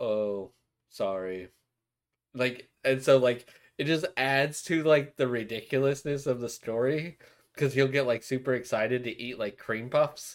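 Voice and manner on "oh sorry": low, flat, deadpan expressionless monotone. Describing a character who scores points like nothing: flat monotone voice. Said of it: "he's just like super like monotone".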